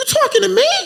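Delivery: voice shooting up very high and squeaky. Speaker recounting his reply when a group suspected an infiltrator, voice going high. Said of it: "and my voice got high".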